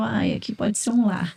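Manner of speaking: ordinary talk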